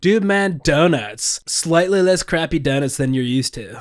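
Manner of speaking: bad put-on dude-bro commercial announcer voice. Pitching a donut shop idea, the speaker acts out the marketing in a put-on commercial voice. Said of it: "what's with the voice though?".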